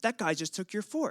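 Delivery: high, outraged, angry outburst. Retelling what a friend's friend said after a man took the speaker's fork, imitating an angry man. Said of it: "he gets really, really angry".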